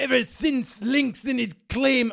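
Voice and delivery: put-on Scottish accent. After offering to do the Scottish one on the podcast, Scottish accent. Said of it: "I can do the Scottish one as well".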